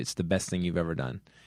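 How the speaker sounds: plain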